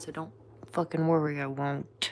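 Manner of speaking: defiant, through clenched teeth. Speaker talking about her card deck answers her critics; through gritted teeth. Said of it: "She says through gritted teeth".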